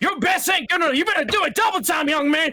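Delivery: shrill, very high, loud barking delivery. Narrating a scene, voicing someone barking orders at a young man: barking out orders. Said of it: "someone like barking out orders".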